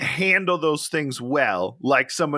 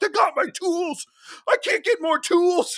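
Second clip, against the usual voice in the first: shrill, shrieking, very high screaming outburst. Retelling how a man in a garage reacted to his car: imitating a man screaming. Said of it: "And he just kept screaming".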